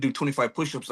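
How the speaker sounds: ordinary delivery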